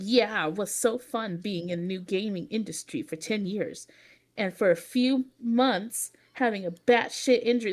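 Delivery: play-acted patronizing, low, condescending, talking-down delivery. Reading aloud a post by someone who mocked the speaker: mock-condescending reading. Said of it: "let me try to read it how like I think he's trying to be condescending".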